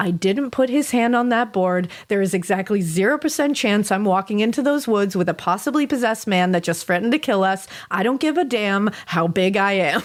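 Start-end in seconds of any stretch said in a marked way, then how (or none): none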